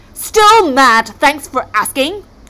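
loud bellowing voice. Uncle Eric answers Snorri's question about Auntie Agnetha, bellowing. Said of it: "bellowed Uncle Eric".

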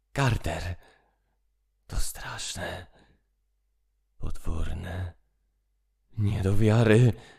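frantic, fevered, agitated voice. A man calls up from underground to his friend, in feverish tones. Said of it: "rozgorączkowane tony".

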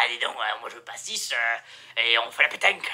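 accent from Marseille. Joking about doing it in a humorous way, in a put-on Marseille accent. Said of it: "peut-être le petit accent marseillais, parce que c'est rigolo".

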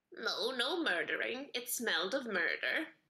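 talking crow bird creature character voice. A game master voices a crow answering a player's questions, talking crow voice. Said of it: "One flutters over to you and starts pecking at the food in your hand".

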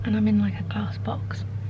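soft, unvoiced whisper.

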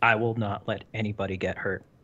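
completely deadpan. Narrating Tom's reply to Al's comment, completely deadpan. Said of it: "completely deadpan".

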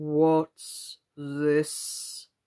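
very deep, hollow, soft, bell-like voice. Narrator reads the sleepy lion's question to Alice, in a deep, hollow tone. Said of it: "speaking in a deep, hollow tone".

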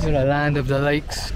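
ordinary delivery

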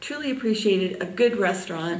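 usual speaking voice

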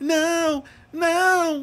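very high, frantic, desperate cry, drawn-out "no". Retelling trying to stop a game in a panic: mock-desperate tone. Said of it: "numa entonação de desespero".

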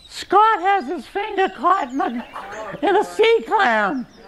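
put-on very high, drawn-out, tearful crying scream. Retelling a phone call from a wife about a child's trapped finger: imitating someone crying and screaming. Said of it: "crying, screaming".

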